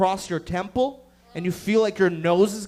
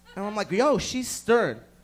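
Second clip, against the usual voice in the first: ordinary talk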